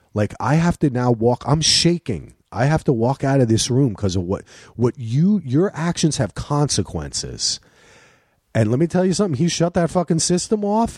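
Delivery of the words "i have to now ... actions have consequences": ordinary talk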